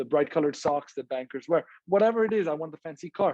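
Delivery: ordinary delivery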